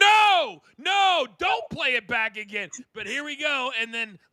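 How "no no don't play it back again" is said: screaming, slow and drawn out. Retelling own reaction to a replayed entrance: retelling own screaming. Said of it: "I was screaming at the T V".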